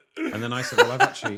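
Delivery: high, loud laughing through the words.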